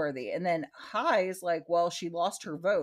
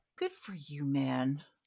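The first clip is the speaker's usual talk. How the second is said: put-on gentle tone, lower pitch; 3 semitones lower, 4 dB quieter than usual. Retelling what one friend said to another friend, imitating a gentle reply. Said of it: "so gentle".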